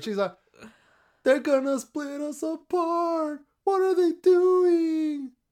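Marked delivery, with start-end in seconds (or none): 1.2-5.3 put-on very high, slow, drawn-out little-girl voice. Defending a performance just rated one out of five stars, imitating her voice. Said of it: "I'm imitating her".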